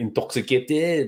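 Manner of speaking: intoxicated said with a distinctive borrowed pronunciation. Saying the word the way it should be said, like Georges St-Pierre. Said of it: "you have to say it like George Saint Pierre".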